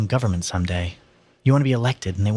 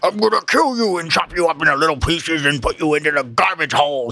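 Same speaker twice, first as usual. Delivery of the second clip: fake storybook monster voice, pitched up; 7 semitones higher, 3 dB louder than usual. A narrator reads a character taunting the others as a game; phony monster voice. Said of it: "In a phony monster voice".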